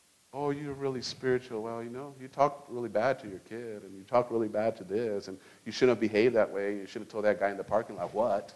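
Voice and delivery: low, seductive voice. Acting out the devil listing a churchgoer's faults: seductive devil voice. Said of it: "shows up with a very seductive voice".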